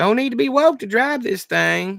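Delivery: put-on very high, thin, tinny, drunken voice. Narrator reading Sandoval's reply, in Sandoval's tinny, drunken voice. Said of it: "came Sandoval's tinny, drunken response".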